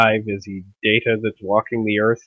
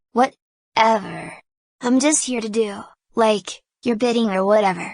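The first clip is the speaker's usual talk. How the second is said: put-on snarky, sarcastic young teenager voice; 12 semitones higher than usual. Riffing on how a programmed character would talk: snarky fourteen-year-old teenager voice. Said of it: "regress into like a fourteen-year-old snarky teenager".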